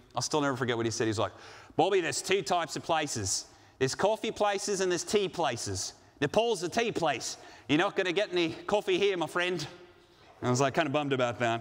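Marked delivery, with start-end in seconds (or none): 1.8-9.7 bad, terrible put-on Australian accent. Quoting what a man once told him, terrible fake Australian accent. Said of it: "very terrible attempt at an Australian accent".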